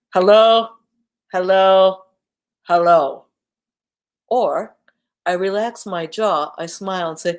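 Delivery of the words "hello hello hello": loud voice spoken through a frown. Demonstrating how face shape changes the sound, frowny-face voice. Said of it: "frowny face".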